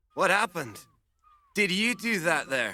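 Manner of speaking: very poor put-on Scottish accent. Playing a dock worker in a clip: very poor scottish accent. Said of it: "a North American doing a very poor Scottish accent".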